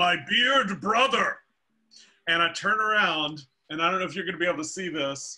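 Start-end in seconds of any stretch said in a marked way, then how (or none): 0.0-1.4 put-on big, loud, booming call, pitched up. Recalling a stranger calling out on Main Street, imitating a loud, booming voice. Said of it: "I hear this loud, booming voice say".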